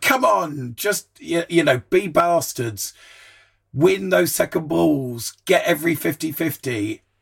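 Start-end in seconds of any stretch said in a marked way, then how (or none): none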